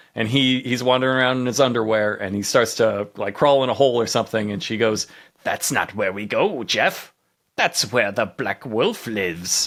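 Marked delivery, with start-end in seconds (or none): 5.5-9.7 tiny, little goblin-like gremlin creature voice. Retelling how somebody led him into the woods, in a little gremlin voice. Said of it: "somebody doing a little gremlin voice".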